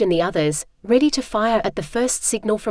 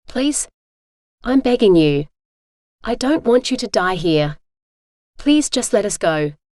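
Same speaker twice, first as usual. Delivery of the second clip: pleading, begging whisper. Reading a standoff scene aloud, the narrator begging her father: pleading whisper. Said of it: "My voice dropped to a whisper".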